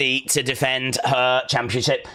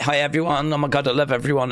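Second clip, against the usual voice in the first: put-on prim, proper manner. Teasing the listener by imitating how they normally greet everyone, mock prim and proper. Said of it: "Normally you're like very prim and proper".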